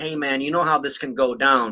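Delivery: normal talking voice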